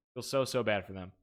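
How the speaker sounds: dripping, heavily sarcastic tone. Talking about people who pretended they got hacked: heavily sarcastic. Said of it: "You feel the sarcasm in my voice".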